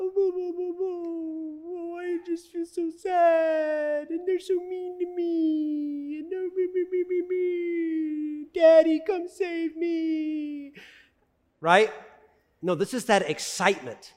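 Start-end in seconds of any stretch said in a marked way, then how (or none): 0.0-10.7 whiny, mournful, very high fake wail, "me" stretched. Explaining a Bible word by acting out what it is not: mock mournful crying. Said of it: "This is not a mournful cry".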